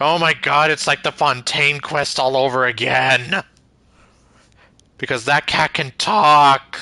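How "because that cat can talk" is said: voice cracking, getting louder. Recalling the Fontaine quest, a speaker exclaims about a talking cat, voice cracking. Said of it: "And my voice cracked over there".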